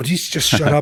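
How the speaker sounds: mock annoyed old man. Retelling being bothered by loud midnight fireworks: retelling old-man annoyance. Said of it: "getting old man annoyed".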